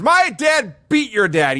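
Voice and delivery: acted, very high, slow, drawn-out, indignant outraged tone. Retelling a wrestler's interview line, imitating an outraged rant. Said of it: "Perfect's even more outraged".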